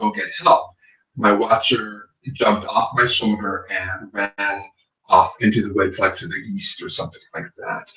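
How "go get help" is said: soft whisper under the breath. Retelling words said to the watcher near the woods: retelling a whisper. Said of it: "I whispered to my watcher".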